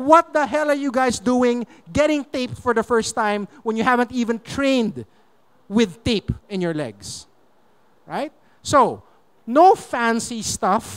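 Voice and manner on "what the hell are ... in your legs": normal talking voice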